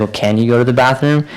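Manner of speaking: usual speaking voice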